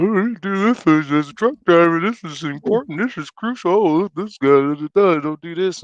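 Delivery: mocking know-it-all voice. Mocking truck drivers' online videos, the speaker imitates them as mocking rookie truck drivers. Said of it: "they all just sound like rookies".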